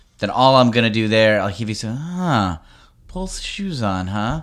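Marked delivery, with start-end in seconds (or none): 2.0-4.4 very slow, wary, suspicious skeptical drawl. Demonstrating an improv reply that matches a partner's tone, suspicious and skeptical. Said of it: "the tone is like suspicious and skeptical".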